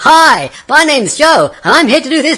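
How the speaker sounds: hurried, very high, loud, bursting with energy. Showing how a presenter who rushes on stage opens: rushed, high-energy intro. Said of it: "running in with high visual energy like that".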